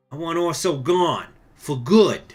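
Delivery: loud tough-guy gangster voice. Boss character ordering a hit on a rival, in a gangster voice. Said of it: "I don't know gangster voice say".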